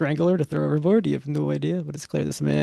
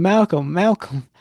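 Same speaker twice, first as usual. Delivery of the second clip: violent rage, much louder; 3 semitones higher, 5 dB louder than usual. A game master voices an angry old man calling for his son: in a violent rage. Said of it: "This man is in a in a violent rage".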